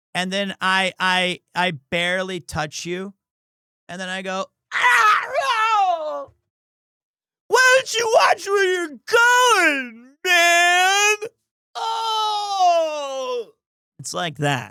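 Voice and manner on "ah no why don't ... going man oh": very high, slow, drawn-out, over-the-top fake pain. Showing what flopping in sports means: exaggerated fake pain. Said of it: "it's way over the top. I'm exaggerating".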